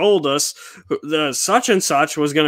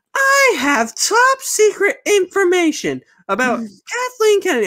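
very high, slow, swooping, sing-song, drawn-out voice. Quoting a reporter's claim about secret studio news: Grace Randolph impression. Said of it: "that voice is right now".

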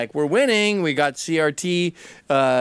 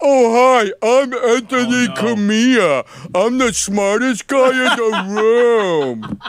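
put-on goofy dopey voice, high, loud, mocking; 7 semitones higher, 6 dB louder than usual. Describing how a man's injured son talks, doing a put-on mocking voice. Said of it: "he talks like when you make fun of people".

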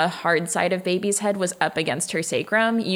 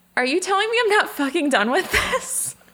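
put-on, very high, shrill, indignant yell; 11 semitones higher than usual. Retelling what a woman yelled after giving birth, retelling her yell. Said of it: "she just straight up yelled".

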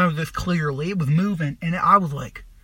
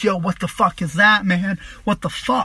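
put-on frantic, alarmed, panicky, freaked-out voice. Speaker retelling the moment something started talking, retelling freaking out. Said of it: "And so I'm freaking out".

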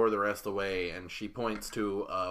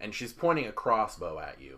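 normal talking voice

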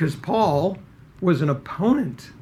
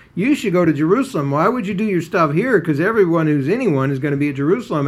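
mocking taunting tone, louder; 5 dB louder than usual. Retelling how the brothers taunted Jesus: imitating mocking brothers. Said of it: "really with that kind of tone of voice".

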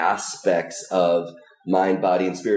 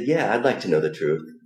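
imitated hesitant reply. Retelling his own reply when asked if he wants the truth: imitating a hesitant reply. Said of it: "And hesitantly".

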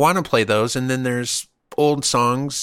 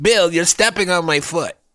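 put-on woman's voice, higher-pitched; 6 semitones higher, 3 dB louder than usual. Playing the wife in a party scene with a partner: playing Bill's wife. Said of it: "I was gonna do the wife".

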